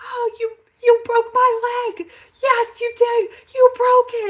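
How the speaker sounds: screaming at full volume, very high and shrill. Retelling a woman in a van at the hospital: imitating a woman screaming. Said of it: "she was screaming".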